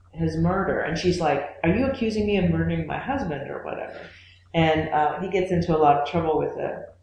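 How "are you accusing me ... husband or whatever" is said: normal talking voice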